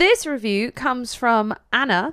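slow, mechanical, machine-like robotic voice. Podcast host starts reading a listener review aloud, robot voice. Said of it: "I don't know why I said that like a robot".

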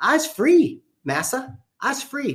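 high-pitched put-on dialect voice.

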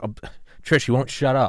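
high, loud teasing, griping tone.

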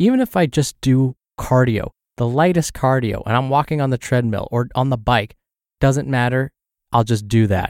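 ordinary talk

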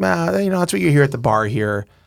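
imitated thick Pittsburgh accent. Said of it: "my version of a very thick Pittsburgh accent".

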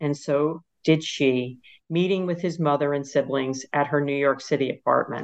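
ordinary talk

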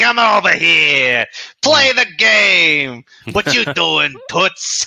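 put-on slinky sleazy guy voice. Describing the kind of guy the word Coney brings to mind, put-on sleazy fella voice. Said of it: "kind of sleazy sort of fella who's just like".

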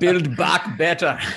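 loud high Austrian accent. Joking that a slogan sounds like Arnold Schwarzenegger Austrian accent. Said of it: "sounds like Arnold Schwarzenegger explaining how he's going to strengthen your back muscles".

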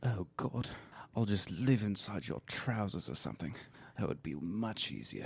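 put-on hushed, soft British accent. Acting out the leaked phone call tapes: Prince Charles British accent. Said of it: "I'll be Charles. I do a pretty wicked British accent".

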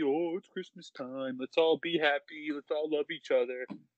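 mocking, sarcastically put-on cheerful voice. Mocking Christmas after being told it is wholesome, in a mock-cheery voice. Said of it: "Christmas makes everyone all happy".

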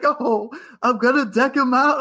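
super excited, thrilled, high, drawn-out delivery. Retelling a streamer's plan to deck an opponent out: imitating someone super excited. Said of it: "he's super excited".

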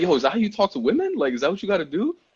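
quick, high, wondering delivery. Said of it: "So I'm like".

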